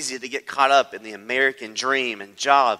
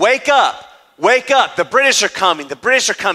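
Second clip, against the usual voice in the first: intense, loud, high-pitched urgent alarm cry; 7 semitones higher, 7 dB louder than usual. Retelling how a man went to the streets to warn of an attack, acting out an intense plea. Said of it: "You could just hear the intensity in his voice".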